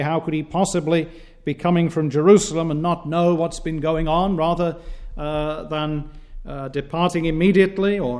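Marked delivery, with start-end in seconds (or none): none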